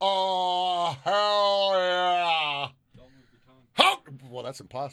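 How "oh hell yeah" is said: open-mouthed delivery, pitched higher. Showing how to say the line with the mouth open.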